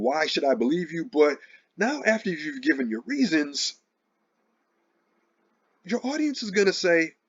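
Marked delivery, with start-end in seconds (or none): none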